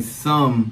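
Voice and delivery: the word 'some' said with strong stress. Discussing a paternity court case, stressing 'some'. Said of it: "emphasis on some".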